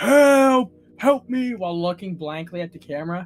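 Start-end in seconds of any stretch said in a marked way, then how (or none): 0.0-1.5 shrill, very loud, high, drawn-out screaming. Retelling a video, the speaker imitates a man in a parking lot screaming. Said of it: "just randomly screaming".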